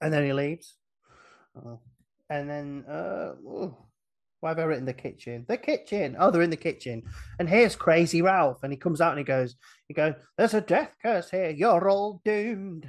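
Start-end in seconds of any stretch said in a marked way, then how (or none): 10.4-12.9 put-on spoken with Scottish accent. A speaker acting out the scene where Crazy Ralph enters the kitchen: Crazy Ralph in Scottish accent. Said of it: "I've done that in a Scottish accent".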